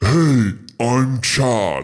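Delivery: giant monster character voice. Voicing an acorn golem who greets a player: voicing Chad the acorn golem. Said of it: "you just hear this voice say".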